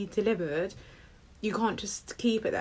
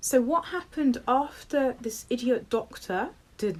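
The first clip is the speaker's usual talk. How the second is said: ordinary talk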